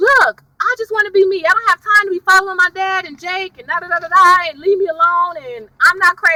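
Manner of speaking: put-on angry, upset rant. Retelling a TV character's angry monologue: imitating Liv angry and upset. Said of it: "She was all angry and just upset".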